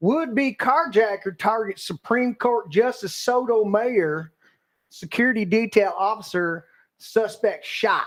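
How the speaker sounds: put-on Southern US accent. Reading a news headline aloud on a show: put-on southern accent. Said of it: "I'm gonna do it in in uh, Southern accent".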